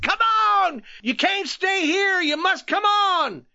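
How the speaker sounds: very high, shrill, shrieking scream. The young lieutenant comes forward and urges the men on, screaming. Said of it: "he screamed".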